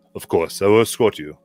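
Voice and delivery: very loud, booming male character voice. Voicing Gunn offering to escort a player: Gunn's deeper voice. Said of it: "his voice is deeper".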